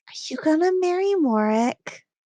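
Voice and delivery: put-on high, loud, not-so-secret child's stage whisper. Retelling a kid leaning in to ask him something; imitating a kid's stage whisper. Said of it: "you know that kid whisper thing".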